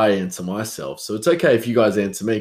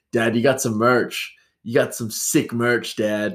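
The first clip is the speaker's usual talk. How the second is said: put-on lightly American accent. Retelling what a son said about merch: imitating son's American accent. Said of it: "he said it with an American accent".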